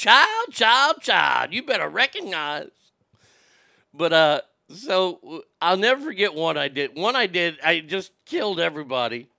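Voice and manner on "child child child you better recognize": slow put-on voice, swooping up high.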